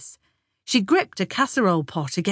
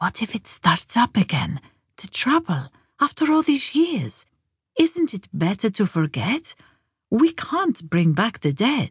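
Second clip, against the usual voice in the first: voiced stage whisper. Narrating a child asking her mother a question at the table, in a half-whisper. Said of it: "She lowered her voice to a whisper".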